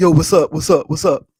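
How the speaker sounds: loud put-on dude voice. Speaker showing how they answer the phone pretending to be a dude, put-on dude voice. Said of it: "you would think it's a dude".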